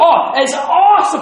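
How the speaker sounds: excited, hyped-up voice.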